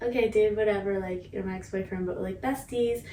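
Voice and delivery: ordinary talk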